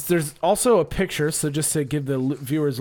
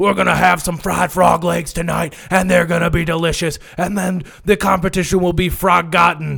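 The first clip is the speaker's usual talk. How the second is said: mock screaming, higher and louder; 4 semitones higher, 7 dB louder than usual. Retelling how a robot coach screamed before a match: imitating a coach screaming.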